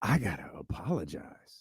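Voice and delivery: pitch swooping up and down, rising and falling randomly. Imitating Stephen A. Smith apologizing, with inflection going up and down. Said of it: "It's gotta go up and down".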